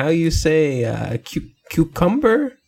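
put-on Spanish accent, slow and high. Retelling a clip of Hilaria faking an accent: imitating Hilaria's fake Spanish accent.

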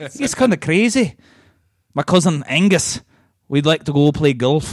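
put-on Scottish accent with words dragged out. Asked by another speaker whether they can do Scottish: Scottish accent. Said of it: "Can you do Scottish?".

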